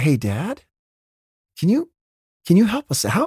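gentle, polite voice. At a movie, retelling how Eric leaned forward to ask a dad, imitating a gentle polite ask. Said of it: "He's gentle. He's kind. He's polite".

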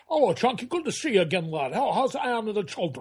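put-on Scottish-accented voice. Retelling how a Scottish actor greeted the crew: Sean Connery impression. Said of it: "he's a Scottishman, Scottish actor".

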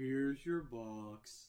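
slow voice, word "box" drawn out. Acting out the man who leads you up to your box, in an Eeyore voice. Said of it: "It's Eeyore".

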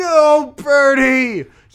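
high, loud, slow yelling. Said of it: "I'm just like".

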